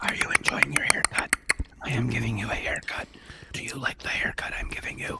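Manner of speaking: soft ASMR whisper, very close to the ear. Tasting cheese on stream, switching to an asmr haircut bit: asmr whisper. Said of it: "I'll make it ASMR".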